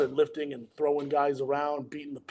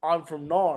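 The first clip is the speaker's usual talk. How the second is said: put-on Australian accent. Retelling how a man says where he is from: imitating Joel's Australian accent. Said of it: "because he has an Australian accent".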